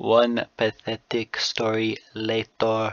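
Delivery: slow, put-on storybook narrator voice. Showing the kind of voice they would use, a put-on narrator voice. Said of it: "I'll do the narrator voice".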